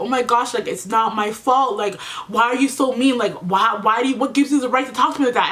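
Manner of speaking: put-on crying, tearful. Telling how she cried to a woman, imitating her own past crying plea. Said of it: "And I'm crying".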